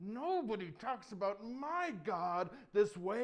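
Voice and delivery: mock mad, loud, slow, deliberate angry tone. Telling the David story, the hero answers a giant mocking God, retelling an angry retort. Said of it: "he's getting mad".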